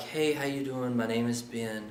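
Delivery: very quiet, low, nervous delivery. Showing how a nervous person introduces himself at a lower tone: low, nervous tone. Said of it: "if you are nervous and you start to talk at a lower tone, like".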